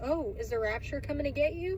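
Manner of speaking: ordinary delivery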